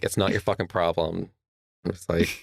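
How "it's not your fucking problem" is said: normal talking voice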